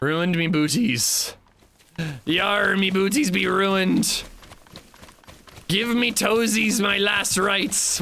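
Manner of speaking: yar-style pirate voice, high and drawn out. Slipping into a bit in the middle of your own commentary, pirate voice. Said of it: "Why am I talking like a pirate?".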